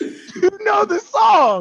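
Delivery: high, slow, loud, drawn-out hype yell.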